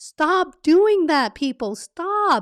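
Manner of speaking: loud high yelling. Addressing everyone listening about unprepared interviews, the speaker is yelling. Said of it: "I'm not yelling at you".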